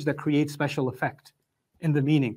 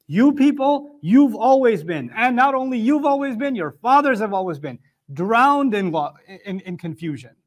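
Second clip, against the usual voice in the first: high, loud, condemning tone. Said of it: "he's saying it in a very offensive way".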